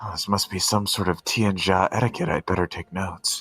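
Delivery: very low, hushed half-whisper under the breath. Game master voicing a guard talking to himself, half-whispering under his breath. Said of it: "whispering under his breath".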